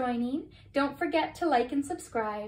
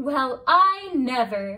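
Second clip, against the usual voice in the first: proud exclamation, louder, slower; 8 dB louder than usual. A mother hears her child is back home from the moon; proud exclamation. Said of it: "her mother exclaimed proudly".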